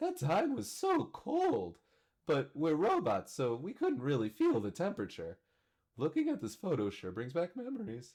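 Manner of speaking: very high, swooping caricature voice for a dog. Narrating a photo memory as robots, in a dog caricature voice. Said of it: "my tele voice is slowly slipping into the uh, caricature uh, voice I give for my girlfriend's dog".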